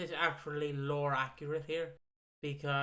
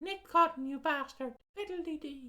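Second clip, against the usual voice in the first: put-on Irish accent; 12 semitones higher than usual. Joking about a character acting stereotypically irish: stereotypical irish accent. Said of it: "I wish they went for the stereotypical Irish approach".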